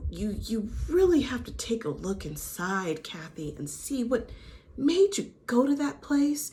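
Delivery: soft, quiet, hushed therapist voice. Recapping a conversation, imitating a woman counseling another, in a quiet therapist voice. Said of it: "She's using this quiet therapist voice".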